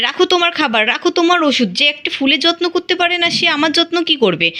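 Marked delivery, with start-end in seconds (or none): none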